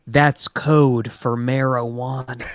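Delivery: whispered, in a character voice. Leaning into another character's ear to explain: whispering in character. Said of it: "I just whisper".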